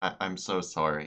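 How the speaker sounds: soft, hushed half-whisper, barely above a breath. Role-play character half-whispers back in Elvish to a tearful character, half-whispering. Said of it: "I whisper back in Elvish".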